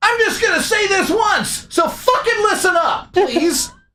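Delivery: very high, shouted screaming voice.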